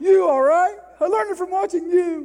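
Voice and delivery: high, very loud, defiant delivery. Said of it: "That's what he says".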